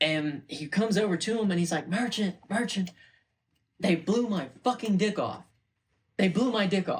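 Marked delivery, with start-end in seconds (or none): 1.9-7.0 put-on, high, frantic, mildly desperate yelling. Retelling what a man yelled at his co, retelling someone yelling. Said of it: "he recognizes like him yelling".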